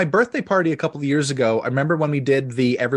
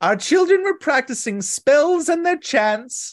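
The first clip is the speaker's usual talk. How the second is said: put-on witch voice, higher; 12 semitones higher than usual. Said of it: "you gotta do it in the voice".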